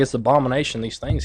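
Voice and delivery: ordinary delivery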